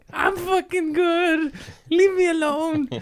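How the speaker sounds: shrill, very high, squabbling voice. Acting out an inner argument about being funny: Gollum arguing with himself. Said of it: "It's like Gollum talking with the fucking ring".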